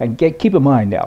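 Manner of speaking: ordinary delivery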